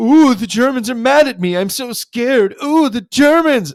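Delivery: very high, loud, put-on frightened voice. Retelling a cartoon scene about a threat from the Germans, Mr. Burns mock-scared. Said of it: "Stop the pretending you are scared game".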